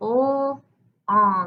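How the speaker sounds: word segmented into separate sounds. Teacher showing how to chop a spelling word into its sounds, sounding it out. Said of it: "Now stretch it out or chop it up".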